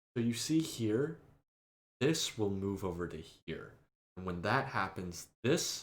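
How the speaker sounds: soft, soothing, super calm zen voice. Describing a professor who explained things calmly, the speaker imitates his super zen manner. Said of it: "he would do it in like the most calming way, like super zen".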